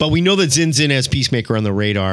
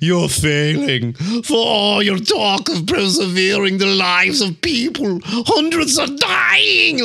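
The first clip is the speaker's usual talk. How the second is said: high, slow, giggling mockery, drawn out; 9 semitones higher than usual. Speaker acts out a dead father's ghost mocking his son, imitating a giggling taunt. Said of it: "he's just like giggling".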